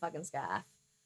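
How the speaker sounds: put-on Maine accent on "scarf". Describing a man in a limo wearing a scarf, Maine accent. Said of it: "I said that with a Maine accent".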